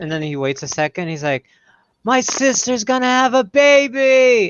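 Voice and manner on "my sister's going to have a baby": mock slow, drawn-out announcer shout, very high. Retelling a man yelling from a high balcony at a tour boat: imitating someone yelling. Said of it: "yelling at this boat".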